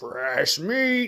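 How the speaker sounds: loud, high, taunting yell. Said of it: "says, yells".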